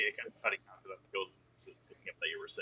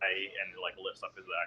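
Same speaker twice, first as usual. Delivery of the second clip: ordinary delivery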